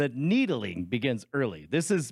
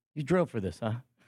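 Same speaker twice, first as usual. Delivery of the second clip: put-on pointed mutter under the breath. Retelling a remark she made almost under her breath: imitating a pointed under-breath mutter. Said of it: "just almost under her breath, but loud enough on purpose".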